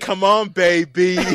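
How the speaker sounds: put-on Jersey-ish accent. Discussing a film's cast, the speaker quotes an actor's line: Brad Garrett's pseudo Jersey accent. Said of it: "that weird like pseudo Jersey-ish accent".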